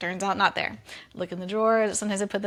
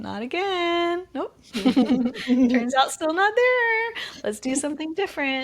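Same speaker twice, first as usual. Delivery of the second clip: breezy, light, teasing tone, pitched up; 7 semitones higher, 4 dB louder than usual. Showing how to talk to oneself kindly: imitating own playful self-talk. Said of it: "catching some levity in my voice of how I talk to myself".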